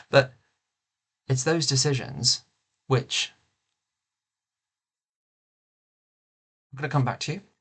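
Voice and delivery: overcome with emotion, halting, choked-up, breaking up. Speaker talking about their nan, overcome by emotion. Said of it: "Emotion got the better of me".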